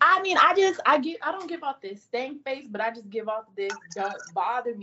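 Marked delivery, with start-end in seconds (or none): none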